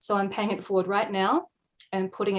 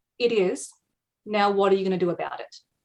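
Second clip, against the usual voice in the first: put-on flat, deadpan delivery. Speaker retells someone's instant reply after admitting their exhaustion; imitating a deadpan reply. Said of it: "replied completely deadpan".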